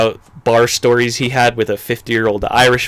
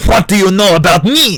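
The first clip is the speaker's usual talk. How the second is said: loud, high put-on French restaurateur accent; 8 semitones higher, 5 dB louder than usual. Retelling a story about Bourdain, quoting the French owner in a French accent. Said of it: "the owner said in a French accent".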